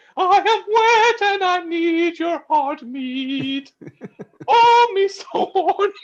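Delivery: dainty, delicate, very high falsetto. Performing a woman who calls out to a man on the street, in a delicate falsetto. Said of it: "it's more delicate".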